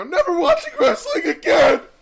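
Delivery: play-acted shrill, booming, very high, loud, furious yell. Retelling a video of an angry man ripping up his wrestling DVDs, imitating someone's angry yelling. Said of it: "He starts yelling".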